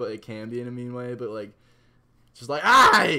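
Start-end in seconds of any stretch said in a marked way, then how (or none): 2.6-3.2 mock Australian accent yelling, higher and louder. Imitating how Australians sound to the speaker: imitating loud Australians. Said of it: "very loud".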